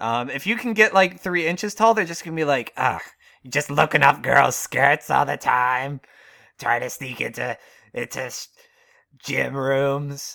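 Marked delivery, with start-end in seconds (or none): 2.8-10.4 put-on old hag voice, slower. Imagining what girls would say about a tiny guy, in an old hag voice. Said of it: "Why does every girl in this scenario sound like an old hag?".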